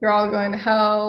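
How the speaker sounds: usual speaking voice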